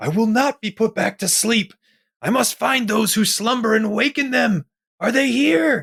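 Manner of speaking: frantic yelling, pitched way up. Tabletop player's character rushes past the fox-eared doctor, yelling frantically. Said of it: "I'm yelling frantically".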